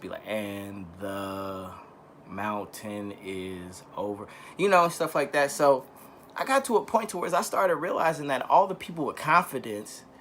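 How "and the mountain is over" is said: very slow, soft, word-by-word reading aloud. Recalling being teased as a child, imitating how they used to read real slow. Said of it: "I used to read real slow".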